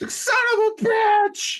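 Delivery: pained wail, very high and very loud. Asked for an impression of Kurt Russell pouring whiskey on his bullet wound, do a Kurt Russell wailing impression. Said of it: "He's just wailing".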